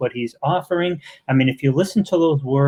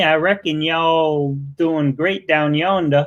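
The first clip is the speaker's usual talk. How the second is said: put-on, mimicked Southern accent; 2 semitones higher than usual. Teasing the other speaker about his accent, imitating Tucker Bearden's accent. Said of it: "That accent, that's what gets me".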